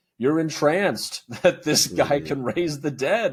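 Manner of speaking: exasperated, emotional, near-begging pleading. Retelling what Shmuel says to Yusuf in a scene: imitating emotional pleading. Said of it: "emotional and pleading almost".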